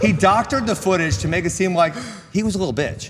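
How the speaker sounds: high, loud, heated ranting.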